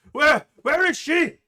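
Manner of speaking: shrill, very high, very loud, furious screaming rage. Voicing a shopkeeper pushing through guards: angry shouting. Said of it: "he is screaming and shouting at the group".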